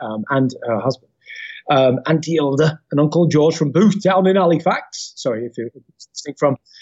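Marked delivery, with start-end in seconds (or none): 1.7-5.1 put-on Halifax-style northern English accent. Naming the relatives in Halifax who took care of him: northern English accent. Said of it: "why I'm doing that accent".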